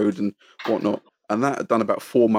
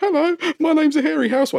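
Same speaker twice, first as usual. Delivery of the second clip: put-on very high, shy, timid little-girl squeak; 3 dB louder than usual. Retelling meeting someone admired: imitating own shy schoolgirl manner. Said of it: "standing like a little schoolgirl going".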